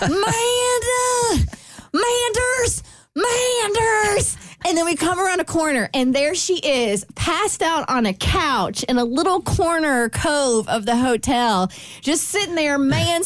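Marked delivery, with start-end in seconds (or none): 0.0-4.4 put-on very high, drawn-out hollering in a southern accent. Retelling searching a hotel for a friend and calling her name: put-on southern accent. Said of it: "our southern accents come out".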